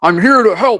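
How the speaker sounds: very high, loud yell. A bald man runs toward you from the door, yelling out. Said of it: "he kind of yells out".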